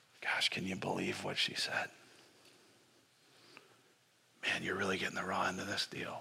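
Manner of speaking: grumbling in a low voice. Showing how someone grumbles behind the scenes: muttering under one's breath. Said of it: "It's the under your breath".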